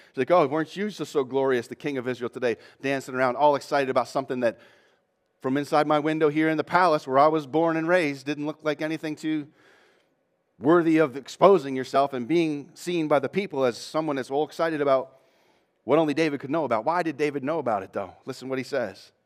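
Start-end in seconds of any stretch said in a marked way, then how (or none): none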